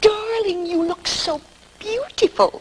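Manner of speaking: very high-pitched, over-enunciated, each syllable spelled out. Showing how adults talk to a three-year-old child, over-enunciating to a small child. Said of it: "we enunciate".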